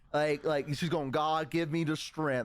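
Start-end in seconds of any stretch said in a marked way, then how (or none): none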